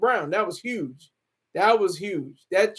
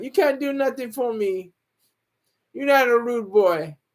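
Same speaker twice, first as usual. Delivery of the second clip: put-on Caribbean accent, done playfully. Retelling how she curved Jake, quoting her in a put-on accent. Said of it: "I do the accent".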